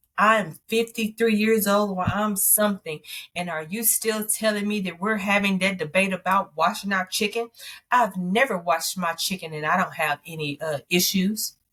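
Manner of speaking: ordinary talk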